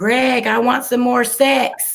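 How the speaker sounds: put-on high yell, projected far. Recalling a lady calling across the room to the speaker's brother, imitating someone yelling. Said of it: "she would yell across the room".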